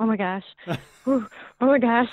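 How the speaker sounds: imitated panting, breathing hard. Retelling own words after a scare, imitating breathing hard. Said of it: "breathing hard and saying".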